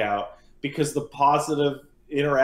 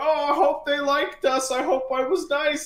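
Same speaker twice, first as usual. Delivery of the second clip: high, mock anxious, freaked-out fretting; 12 semitones higher than usual. Retelling hiding to eat pie by a window: imitating Paige freaking out. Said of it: "Paige is freaking out, going".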